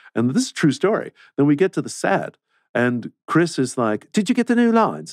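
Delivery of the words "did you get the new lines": badly done, very high-pitched voice. Retelling what a coworker asked on set: terrible Chris impression. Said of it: "That's a terrible Chris impression".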